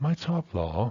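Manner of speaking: genuine, authentic surprised exclamation sound. Pronunciation lesson on showing meaning through delivery, genuinely surprised. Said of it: "I'm really indicating authentic surprise".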